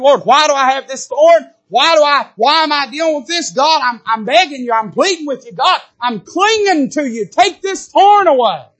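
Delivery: high-pitched pleading, begging cry. Acting out Paul pleading with the Lord: imitating Paul crying out to God. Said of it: "is crying out to the Lord".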